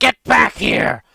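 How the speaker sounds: very loud, rough, shrill squawking bird voice. Narrating a fight turn, a creature yells after Az: squawking bird-like voice. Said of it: "in a much more squawking bird-like voice".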